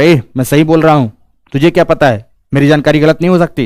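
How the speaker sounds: dug-in, unbudging, stubborn, adamant tone. Showing how not to reply about your own knowledge: stubborn, adamant tone. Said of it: "अडिग होकर ... ऐसे नहीं बोलना है".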